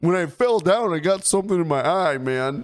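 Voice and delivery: high, fast mocking voice. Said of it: "I'm like".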